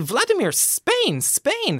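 play-acted, very high, swooping, urgent, worried pleading. Retelling pointing south to the driver Vladimir, retelling an anxious plea. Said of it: "sort of, you know, anxiously".

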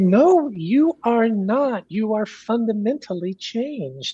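high-pitched, slow, strong angry insistence. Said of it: "very angrily and strongly".

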